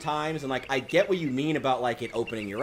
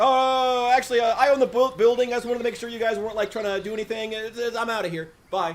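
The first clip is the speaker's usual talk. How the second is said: flustered, backpedaling, high, nervous, stumbling babble; 8 semitones higher, 3 dB louder than usual. Retelling what the rider on the motorbike said next: imitating nervous speech. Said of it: "he got super nervous then".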